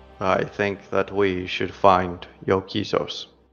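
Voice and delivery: quiet. A game narrator voices a man who had said nothing, now speaking quietly. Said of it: "And says quietly".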